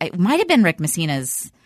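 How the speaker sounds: usual speaking voice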